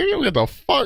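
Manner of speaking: indignant, offended tone. Retelling refusing a guest's price: retelling an offended outburst. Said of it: "I was so offended".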